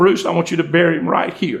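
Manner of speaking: mock words spoken through tearful weeping. Retelling a widow's words at her husband's cemetery lot: imitating a crying voice. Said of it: "in a crying voice".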